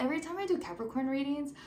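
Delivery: way too fast, rushed, hurried chatter.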